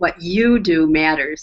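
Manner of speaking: YOU leaned on, rest eased off. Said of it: "we can emphasize different words".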